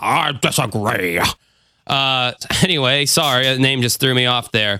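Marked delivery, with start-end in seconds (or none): 0.0-1.2 put-on old courtroom judge voice. Repeating own line to show how it sounded: imitating an old judge voice. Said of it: "like, old judge or something? Just like".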